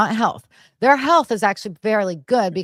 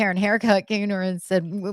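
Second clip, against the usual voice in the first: ordinary delivery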